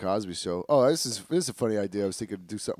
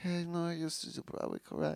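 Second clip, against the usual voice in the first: mimicked high voice, much higher, quieter; 9 semitones higher, 9 dB quieter than usual. Talking about The Wrestler with friends, the speaker imitates a man who talks high. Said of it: "He talks kind of high".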